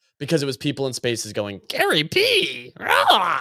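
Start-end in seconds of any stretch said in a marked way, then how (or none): 1.7-3.4 high, slow, drawn-out goblin cry. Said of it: "that's a good Goblin voice".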